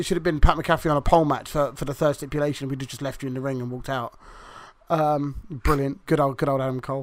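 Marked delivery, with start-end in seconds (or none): none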